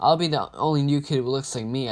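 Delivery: plain reading voice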